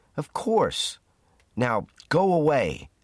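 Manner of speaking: deliberate, high, drawn-out shout. Hal answers a man who doubts his heavy sledge will move, shouting. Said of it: "shouted Hal".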